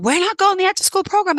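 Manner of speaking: put-on very high-pitched shrieking children's voices. A mother retells her kids' reaction to the after-school program, imitating kids screaming. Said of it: "And then they started screaming".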